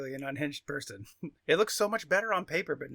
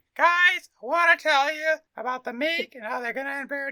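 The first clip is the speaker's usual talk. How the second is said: squeaky, meek put-on voice, very high and raised; 11 semitones higher, 8 dB louder than usual. Imagining him telling the guys about the meek, in a put-on high voice. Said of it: "if he just had a high voice".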